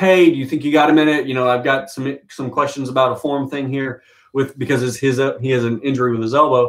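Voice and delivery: ordinary talk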